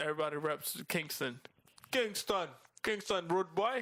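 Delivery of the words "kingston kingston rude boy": slow, drawled, high-pitched put-on Jamaican accent. Joking about which place everybody reps in Jamaica, mock Jamaican accent. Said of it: "You sound like you're mocking them".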